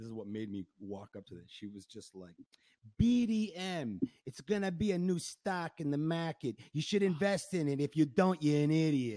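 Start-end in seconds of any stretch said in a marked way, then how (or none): 3.0-9.2 obnoxious mock New Jersey accent, higher and louder. Retelling what a girl at a bar said: imitating an obnoxious new jersey accent. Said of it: "this obnoxious New Jersey accent from this Greek girl".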